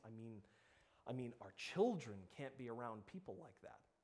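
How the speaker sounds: put-on self-righteous, exasperated tone. Retelling what church members said about a newcomer, in a mock self-righteous, exasperated tone. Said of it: "in that sort of self-righteous, exasperated tone".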